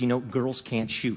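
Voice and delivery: soft, quiet voice. Telling the audience what someone said entering the auditorium, said softly. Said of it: "He said it softly".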